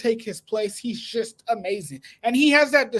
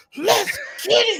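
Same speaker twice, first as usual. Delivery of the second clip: mock macho wrestler shout, higher pitch; 10 semitones higher than usual. Mimicking the other speaker's hype: imitating a macho wrestler. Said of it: "You sound like one of those macho wrestlers".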